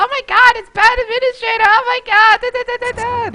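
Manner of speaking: put-on very high, loud, gushing teen fangirl voice. Retelling another player's excitement in the pregame lobby: imitating a teen fangirl voice. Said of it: "he put on his little, like, teen fangirl voice".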